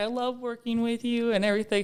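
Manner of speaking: mock ugly crying. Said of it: "ugly crying".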